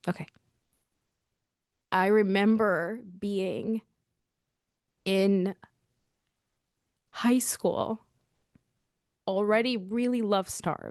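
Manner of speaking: close to crying. Recalling high school for a listener who asked to hear more, on the verge of tears. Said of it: "I'm going to start crying".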